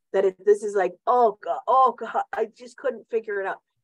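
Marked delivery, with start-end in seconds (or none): 1.0-2.2 loud, slow, drawn-out, acted fearful crying wail. Retelling being scared on a zip line over alligators: imitating own past crying. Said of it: "I'm literally crying the whole way".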